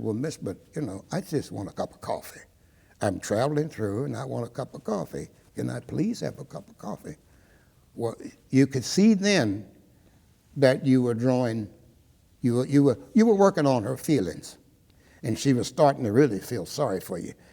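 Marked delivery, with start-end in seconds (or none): 0.0-7.2 put-on calm, courteous, dignified, quiet, no hostility. Recalling how they asked a waitress to serve them, retelling a dignified, calm request. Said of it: "in a dignified manner, no sign of hostility".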